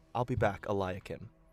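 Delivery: hushed, muttered half-whisper under the breath. Narrating a character who half-whispers under her breath as she walks; half-whispering under her breath. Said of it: "She whispers under her breath".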